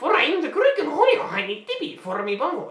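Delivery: very high, shrill, very loud, booming witch voice. Asked what voices they do, the speaker demonstrates a witch character voice. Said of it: "when I do that voice".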